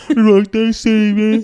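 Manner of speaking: put-on Birmingham accent. Showing people saying a greeting: Birmingham accent. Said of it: "try and do a Birmingham accent".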